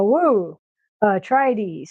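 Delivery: put-on flat, synthetic female narration voice. Retelling a placeholder AI audio clip from the game: imitating a flat AI voice clip. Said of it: "it was really this flat".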